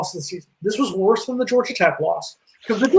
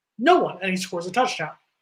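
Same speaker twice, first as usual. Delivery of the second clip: usual speaking voice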